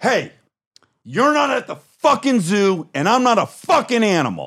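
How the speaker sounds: play-acted very high, shrill, furious snapping outburst. Retelling how they snapped at a woman asking about vacation: retelling snapping angrily. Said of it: "I lost it".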